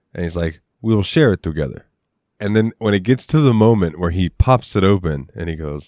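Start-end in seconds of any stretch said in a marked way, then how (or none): 0.8-1.8 put-on thick French accent. Retelling a favorite movie moment about sharing saved wine, use Idris Elba's thick French accent. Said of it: "in that thick French accent that he was doing".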